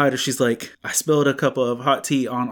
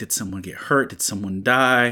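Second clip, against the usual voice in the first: put-on panicked voice, lower; 3 semitones lower than usual. Retelling own first thoughts on hearing a daughter sob: imitating own panicked thoughts. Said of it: "the dad panic in me is like".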